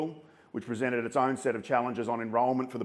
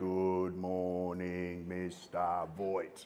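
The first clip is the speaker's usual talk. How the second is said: deeply solemn, most somber tone, low and very slow; 6 semitones lower, 8 dB quieter than usual. Showing how students are expected to greet the principal, most somber tone possible. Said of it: "in the most somber tone possible".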